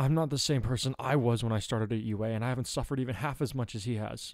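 ordinary delivery

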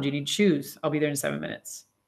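normal talking voice

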